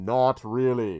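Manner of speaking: huge, thundering, booming, rumbling voice. Voicing a voice from above that answers the players: rumbling voice. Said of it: "You hear a rumbling voice".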